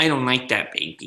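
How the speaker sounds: unimpressed, put-off, displeased tone. Imitating a partner tasting food she dislikes: imitating Colleen tasting food. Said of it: "This is her".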